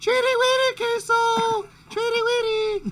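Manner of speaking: very high, loud, high-pitched calling voice. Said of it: "you gotta do it in a high-pitched voice".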